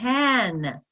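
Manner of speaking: the word "can" stressed. Leading a group to say a question aloud, stressing the word can. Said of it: "emphasizing the word can".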